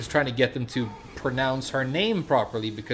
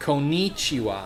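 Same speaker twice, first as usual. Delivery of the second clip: bad American accent, konnichiwa stressed heavily in the middle. Mimicking an American with bad Japanese pronunciation: bad American accent on konnichiwa. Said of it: "when you listen to an American person with bad pronunciation speak Japanese".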